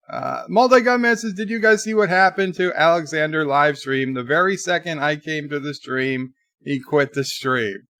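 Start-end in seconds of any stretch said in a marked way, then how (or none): none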